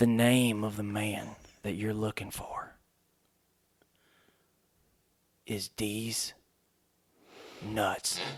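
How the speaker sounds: slow, drawn-out, hushed half-whisper. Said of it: "I'm gonna have to whisper it to you".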